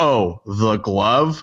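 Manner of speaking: snippy put-on mocking voice. Retelling a snippy remark about a rival's interview: snippy Michael Jordan imitation. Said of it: "saying something snippy about them".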